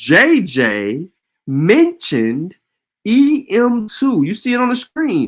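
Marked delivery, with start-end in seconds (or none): 0.0-4.2 very slow, deliberate, word-by-word delivery. Speaking to ladies and gentlemen about a study: very slow delivery. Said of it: "I'm going to say that very slowly for you".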